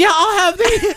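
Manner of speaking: high-pitched voice. Imitating how he sounds ordering food, his voice going real high. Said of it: "His voice gets real high".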